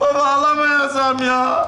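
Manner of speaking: loud, bellowing, bawling, wailing cry. Having saved for a phone he can no longer afford after a price rise, bellowing shout. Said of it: "Tamam lan bağırma".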